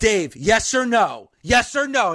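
normal talking voice

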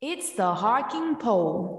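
fake, put-on British accent. The youngest daughter announces the segment title, in a put-on nice accent. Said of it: "She just likes to put on that nice accent".

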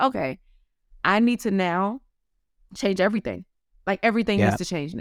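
normal talking voice

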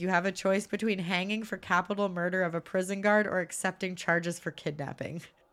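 plain

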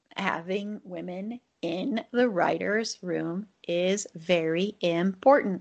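slow, deliberate, emphatic, every word stressed. Making a point about women in writers' rooms, slow, stressing every word. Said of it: "I'm saying that a little slow, stressing each word".

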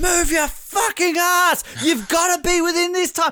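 mock very high-pitched, screamed urging. Act out Cedric urging on his struggling teammate Ashley, imitating Cedric screaming. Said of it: "Cedric basically is like screaming at him".

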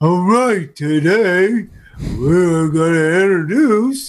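slow, drawn-out cartoon voice. Joking about a show centred on him, a host opens it with a Patrick impression. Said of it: "That's a pretty good impression".

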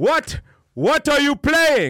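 fake thick Russian accent. Imitating a guy walking in on a card game: imitating thick Russian accent. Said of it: "thick accent".

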